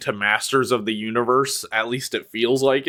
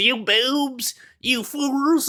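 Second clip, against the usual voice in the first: very high-pitched, slow cartoon villain voice; 14 semitones higher than usual. Describing the iconic cartoon villain and his line, in a Skeletor voice. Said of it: "has a funny voice and goes".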